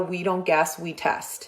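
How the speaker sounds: usual speaking voice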